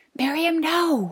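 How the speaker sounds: very high, mortified whisper-shout. The narrator calls after a toddler wandering toward the teacher, mortified whisper-shout. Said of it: "I whisper shouted".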